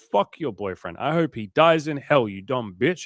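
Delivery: mock offended, butthurt lashing-out rant. Acting out a rejected nice guy's reply: imitating a butthurt guy lashing out. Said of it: "He gets butthurt and he's like".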